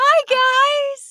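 shrill, very high, loud, "guys" drawn out. Greeting podcast listeners, voice suddenly going very high-pitched. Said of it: "My voice went so high".

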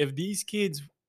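put-on Filipino accent, stress on the word kids.

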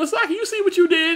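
high, laughing, teasing mock scolding.

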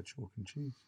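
slightly resigned. Explaining an idiom, showing how people say it, slightly resigned. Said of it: "You have to say it in that like slightly resigned voice".

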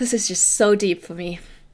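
getting emotional, voice choked up. Talking about a show character's grounding technique, getting emotional. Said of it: "I'm getting emotional again".

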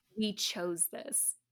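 dark, really ominous supervillain delivery. Recapping a film scene where Hoffman answers Rigg, retelling Hoffman, mock-ominous. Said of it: "Hoffman says really ominously".

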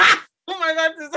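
loud, high scream mixed with laughter. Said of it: "I just screamed into the listeners' ears".

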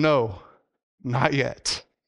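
emotional, choked-up delivery, voice catching. Recounting a man's answer in front of his wife, getting emotional again. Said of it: "I'm getting emotional again".

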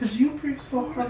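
high, squeaky, mock angry, mock indignant tone.

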